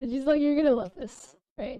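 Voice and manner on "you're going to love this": words broken up by put-on laughter. Retelling what the claims person said on the phone: imitating someone laughing while talking. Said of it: "she's laughing".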